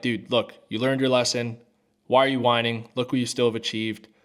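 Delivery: ordinary delivery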